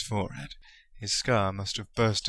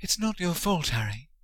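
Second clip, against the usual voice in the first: shaking, trembling voice; 9 semitones higher than usual. Narrator reads a female character's line to a friend, in a shaking voice. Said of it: "her voice shaking".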